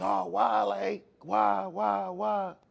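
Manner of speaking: very slow, drawn-out, tearful crying rising upward, acted. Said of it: "And I'm crying like".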